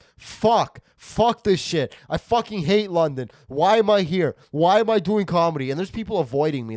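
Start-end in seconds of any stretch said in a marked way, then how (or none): 0.2-5.7 high, loud, unhinged, fed-up meltdown screaming. Comedian recalls screaming in a London parking lot while cleaning the car, retelling own screaming. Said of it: "I'm screaming as I'm cleaning my car off".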